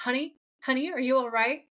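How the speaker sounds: put-on concerned, worried voice. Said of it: "he sounds so concerned".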